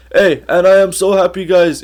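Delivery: high-pitched, yappy chattering voice. Imitating a fighter yapping as a defence lawyer: imitating Merab Dvalishvili. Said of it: "Merab would just yap".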